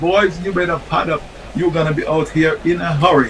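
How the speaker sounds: ordinary talk, nothing marked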